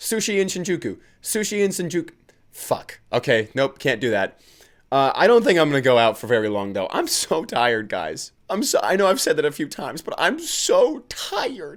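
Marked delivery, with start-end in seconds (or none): 0.0-2.1 rapid, pitched-up, rattled-off delivery. Trying a tongue twister three times in a row, saying it fast. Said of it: "Let's say that three times fast".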